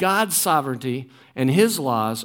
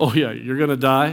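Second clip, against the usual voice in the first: play-acted thick, scornful, dripping sarcastic tone; 2 semitones lower than usual. Acting out the serpent's reply to the woman: acting out dripping sarcasm. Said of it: "dripping sarcasm".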